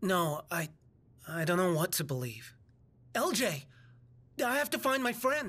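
worried. Answering lj after being told not to trust the monster, worried. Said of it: "You sound worried".

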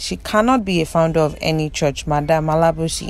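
ordinary talk, nothing marked

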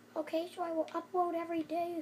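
put-on high, loud, babyish little-child voice. Retelling their second-grade promise to upload every day, in a little babyish voice. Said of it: "I had like a little babyish voice".

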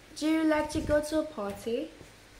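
fake British accent, put on and played up. A mother does a fake accent her daughter asked for: fake British accent. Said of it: "British accent".

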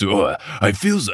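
intense, dramatic action-movie style voice. Showing again the voice just used for narration: intense action-y voice. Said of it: "the intense action-y voice".

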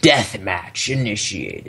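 frightening, spooky put-on voice. Announcing the start of a deathmatch to the other players, in a scary voice. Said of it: "You like my scary voice?".

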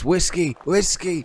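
high, full-throated shout at top of lungs. Speaker retells grandfather searching the streets at night for his lost dog, retelling a loud shout. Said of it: "shouting at the top of his voice".

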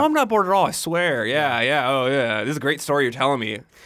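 acted sarcastic tone. Acting out what a secretly jealous man said, retelling a sarcastic remark. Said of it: "I love they were sarcasm there".

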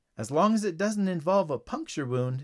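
plain

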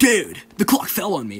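put-on surfer bro voice. Retelling what he blurted out about the fallen clock: put-on surfer bro voice. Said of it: "my brain resorted to the surfer bra voice".

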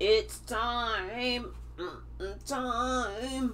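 computerized robotic voice, drawn-out, stretched timing. Speaker delivering what Spirit says to viewers, in a computerized voice. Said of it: "And that's my computerized voice".

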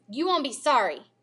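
ordinary delivery, nothing marked

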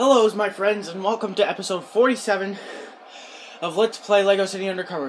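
breathless, winded, short on air. Opening a let's-play video episode, out of breath. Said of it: "I'm a little out of breath".

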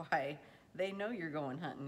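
plain

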